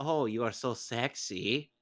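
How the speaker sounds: slow, drawn-out voice, word by word. Imagining how Moses would react to a dress: Tommy Wiseau voice. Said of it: "What is that voice that you are imagining from Moses?".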